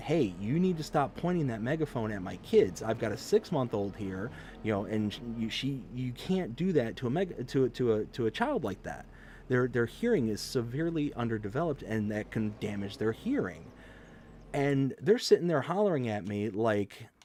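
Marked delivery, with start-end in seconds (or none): none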